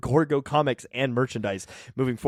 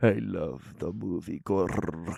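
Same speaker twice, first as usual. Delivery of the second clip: very low, rough voice with rolled R; 9 semitones lower, 8 dB quieter than usual. Told to roll the R, the speaker retries the line in a Nosferatu voice. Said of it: "You gotta roll the R on Gorgo".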